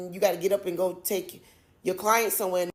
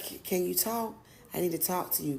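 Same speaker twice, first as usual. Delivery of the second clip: hushed, soft, halting whisper; 8 dB quieter than usual. Retelling a friend's late phone call, imitating Trish whispering. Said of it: "and she's whispering".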